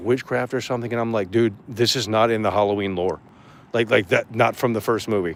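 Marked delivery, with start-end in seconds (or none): none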